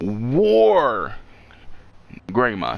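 "war" punched with heavy stress. Naming a new Digimon, putting emphasis on the war part: strong stress on war. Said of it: "You gotta put emphasis on that war part".

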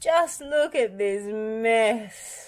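high, very slow groan, "mess" drawn out. Bob arrives to find a puddle of spilled paint: groaning. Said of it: "Bob groaned".

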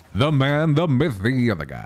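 classic swooping radio announcer voice. A streamer answering a viewer's radio voice redeem, in a radio announcer voice. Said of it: "We got a radio voice redeem".

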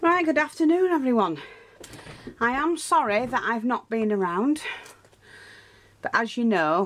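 breathless, puffed-out, winded, slightly high voice. Greeting everyone after running up the stairs: out of breath. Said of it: "I'm a little bit out of breath because I ran up the stairs".

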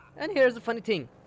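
cracking voice, breaking high mid-phrase. Narrating their own video, voice cracking. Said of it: "my voice cracked".

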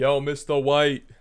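loud, hollered voice. Making an AI image of a character talk: Jesse Pinkman impression. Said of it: "This is by Jesse Pinkman impression".

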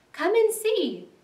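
overjoyed, eager, high, delighted call. The rat calls the mole over after digging in the snow, delighted. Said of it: "said the delighted rat".

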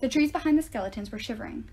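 ordinary delivery, nothing marked

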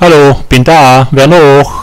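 loud, vigorous, energetic calling out. Unsure whether to dare, then deciding to call out: energetic call. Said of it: "ich rufe jetzt mal energisch".

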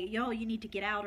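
ordinary talk, nothing marked

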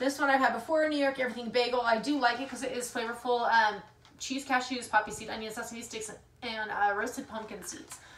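hurried, rapid, rattled-off nonstop delivery. Speaker going through snacks they keep being given, talking fast. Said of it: "I'm talking so fast".

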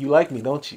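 imitated whisper. Retelling going up to her after class: retelling a whisper. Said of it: "I whispered in her ear".

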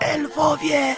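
hoarse whispered shout. Sam cries out to his companions that the elves are near, in a hoarse shouted whisper. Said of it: "Krzyknął ochrypłym szeptem Sam".

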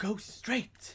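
stern, fatherly scolding tone.

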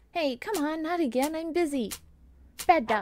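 high scolding voice. Busy speaker snaps at a dog that keeps bothering him, yelling. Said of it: "Sorry for yelling".

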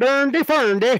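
babbling puppet-style Scandinavian cook voice. Answering whether that is how they sound in Iceland: Swedish Chef voice. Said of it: "like the Swedish chef".

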